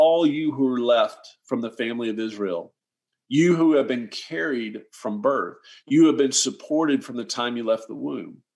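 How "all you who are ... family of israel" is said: ordinary delivery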